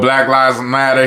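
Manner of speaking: ordinary talk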